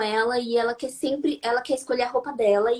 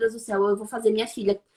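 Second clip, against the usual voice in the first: ordinary delivery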